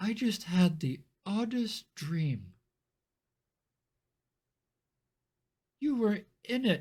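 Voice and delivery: terrified, high, frightened voice with fear creeping in. Voicing a noblewoman waking from a strange dream: terrified. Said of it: "she starts to look terrified".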